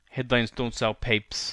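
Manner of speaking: put-on New York accent. Trying out the accent from a movie line just watched: New York accent. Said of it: "let's try and do it, New York".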